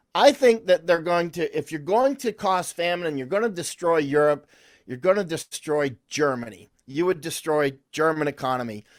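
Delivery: ordinary talk, nothing marked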